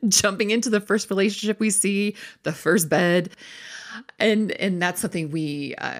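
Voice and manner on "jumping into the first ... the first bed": laughing through words, pitched up. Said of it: "you hear in my voice, I'm laughing about it".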